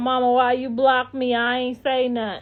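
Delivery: play-acted, tearful, sobbing, whiny crying. Imitating a blocked commenter messaging from a fake page: imitating someone crying. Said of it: "Now she gonna be crying from another fake page talking about".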